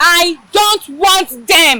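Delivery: loud, carrying shout. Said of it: "You just shout".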